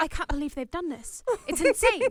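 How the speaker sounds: worked-up, heated ranting tone. Describing a designer going off in her interview behind their backs, imitating a designer ranting. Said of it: "going off about 'em".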